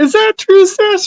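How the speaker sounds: very high, entitled soccer mom voice. Asked to say the line as a soccer mom, in a soccer mom Karen voice. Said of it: "say it as a soccer mom, Karen".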